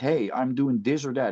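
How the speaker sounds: ordinary talk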